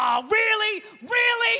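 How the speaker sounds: very high-pitched, exasperated, fed-up disbelief. Retelling your own reaction when your computer crashed; mock-exasperated. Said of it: "on the computer and it would crash".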